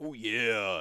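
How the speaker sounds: big, macho wrestler-style voice. Retelling a sudden realization, Macho Man Randy Savage voice. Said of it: "a little bit more Macho Man".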